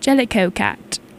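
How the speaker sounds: put-on refined upper-class British accent. Recalling what a woman always said during study abroad, posh British accent. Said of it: "she had like the most beautiful posh British accent".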